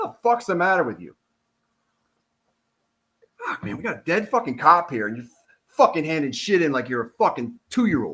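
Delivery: upset, worked up. Saying what he would have told the report's writer, getting upset. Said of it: "I'm getting upset".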